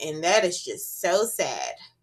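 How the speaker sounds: normal talking voice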